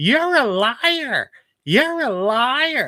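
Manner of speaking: odd shrill, high, loud, drawn-out voice. Speaker quoting a guy from an early experience, in his weird high voice. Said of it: "this guy got guy had this weird high voice".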